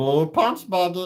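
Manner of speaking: animated creature voice. Demonstrating voices on a live stream: Stitch voice. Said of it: "The kids like the Stitch voice".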